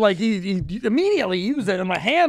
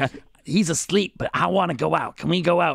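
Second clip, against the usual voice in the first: slower, sinister, put-on evil creature voice; 4 semitones lower than usual. Speaker acts out Eddie's penis asking to go out; evil voice for Eddie's penis. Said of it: "such an evil voice".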